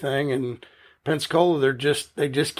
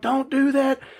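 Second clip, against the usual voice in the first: yell, higher; 10 semitones higher than usual. Retelling yelling to a driver from the top of the truck: imitating own yelling. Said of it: "I'm yelling from the top of the truck".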